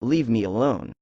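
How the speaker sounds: ordinary delivery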